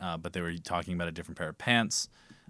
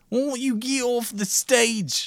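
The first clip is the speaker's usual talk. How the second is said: put-on cockney judge voice, higher pitch; 8 dB louder than usual. Playing Simon Cowell dismissing a performer, do a bad Simon Cowell impression. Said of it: "You gotta study up on those accents".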